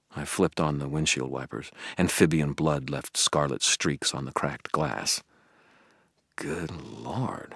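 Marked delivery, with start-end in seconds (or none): 6.4-7.6 breathed murmur, much quieter. Someone in the car reacts as blood streaks the cracked windshield; breathed. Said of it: "Billy breathed".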